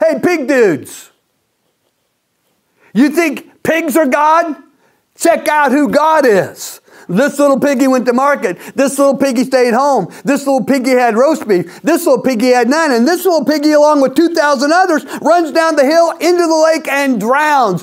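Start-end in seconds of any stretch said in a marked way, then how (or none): 0.0-6.8 acted half-yell, as if calling across a distance. A speaker retells the pig story, imagining a call to the pig herders; imagined Jesus yelling. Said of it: "I hear Jesus yelling at the pig herders".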